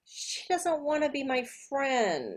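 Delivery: put-on really sad, small, high child voice. Reading a child's statements aloud for a listening exercise, really sad child. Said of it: "You sound really sad".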